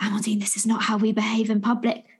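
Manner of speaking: mock muttering under the breath. A parent retells scolding a child in public, retelling a mutter under breath. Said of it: "I find myself muttering under my breath".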